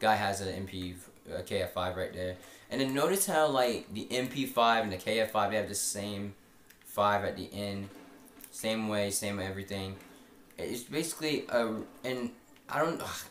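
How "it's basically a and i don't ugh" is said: stuttering, stumbling and tripping over words. Explaining two guns to viewers, stuttering. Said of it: "I'm stuttering right now".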